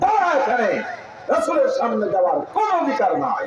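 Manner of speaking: angelic voice, scolding.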